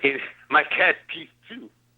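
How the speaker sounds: attempted Jamaican accent, loud. Retelling what a man said, the speaker tries a put-on Jamaican accent. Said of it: "I'm trying my Jamaican accent".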